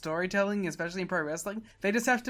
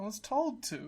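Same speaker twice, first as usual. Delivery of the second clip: voice full of defeat, beaten-down; 3 semitones higher, 7 dB quieter than usual. Acting out a confrontation as Shelley, defeated voice. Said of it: "the defeat in [name]'s voice".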